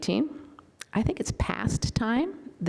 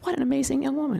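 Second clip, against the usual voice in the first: higher-pitched voice catching, choked up with emotion; 6 semitones higher than usual. Speaker pointing to a picture of a Parkland student, choked up. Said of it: "I still get choked up".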